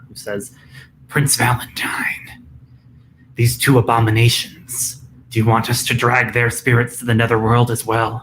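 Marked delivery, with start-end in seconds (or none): 1.1-8.2 raspy, hoarse, otherworldly creature voice. A night gaunt speaks in the prince's ear: hoarse night gaunt voice. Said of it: "a kind of hoarse voice of a night gaunt".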